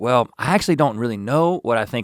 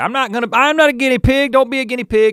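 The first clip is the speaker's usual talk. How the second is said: mock Southern accent, pitched much higher and louder; 14 semitones higher, 5 dB louder than usual. Discussing vaccine mockery, the speaker quotes skeptics in a put-on southern accent. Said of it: "don't use an accent".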